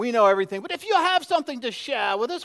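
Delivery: arrogant, superior British accent. Demonstrating how a group might have sounded, in an arrogant british accent. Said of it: "It's kind of arrogant".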